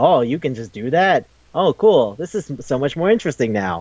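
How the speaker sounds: usual speaking voice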